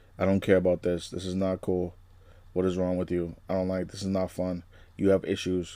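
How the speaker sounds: acted, soft, flat, bored, uncaring deadpan monotone drone. Speaker imitates how she acts when playing Wednesday, flat monotone Wednesday voice. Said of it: "Kind of like monotone, kind of talking".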